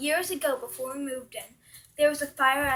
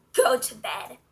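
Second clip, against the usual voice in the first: put-on deep, near-yelling old woman voice; 4 dB louder than usual. Retelling what an old woman would say to them at night: imitating a deep, near-yelling voice. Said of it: "in a deep voice, yelling at me almost".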